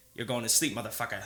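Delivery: understated, low-key taunting tone. Retelling a line said in the background before a fight: impression of Daniel. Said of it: "Another good impression".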